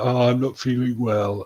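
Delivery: fake sick-sounding put-on voice. Retelling how a man on a trip pretended to be sick; imitating someone faking sickness. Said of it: "he pretends to be sick".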